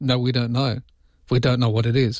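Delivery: ordinary delivery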